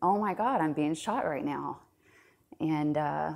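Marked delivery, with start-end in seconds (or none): none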